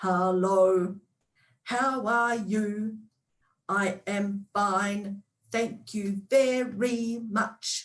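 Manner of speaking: each syllable stressed separately, choppy delivery. Showing a silly way of talking: each syllable emphasized. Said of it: "what I'm doing is I'm emphasizing each of the syllables as I go".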